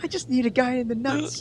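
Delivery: high, loud, giggly, giddy squealing impression.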